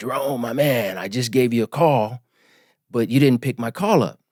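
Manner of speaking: raspy voice, rasp running through every word. Retelling a Zoom call with Governor Newsom, the speaker does a raspy Newsom impression. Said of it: "he talks with this raspy voice".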